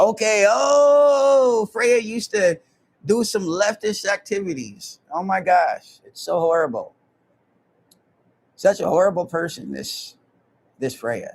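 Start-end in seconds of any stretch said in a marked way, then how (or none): 5.1-11.3 thick, heavy, put-on sarcastic tone. Telling viewers about Freya, calling her horrible: sarcastic, put-on tone. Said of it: "I'm being sarcastic as fuck".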